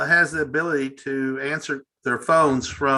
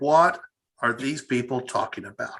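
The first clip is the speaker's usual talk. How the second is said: normal talking voice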